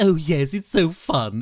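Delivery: slow, drawn-out cartoon baby character voice. Impressionist lists voices he can do and does one: Stewie Griffin impression. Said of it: "such as Stewie Griffin".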